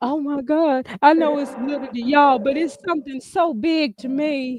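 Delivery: put-on crying through the words, fake tearful voice. Mocking a fan who prints out a comment: mock crying. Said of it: "print the page out while crying".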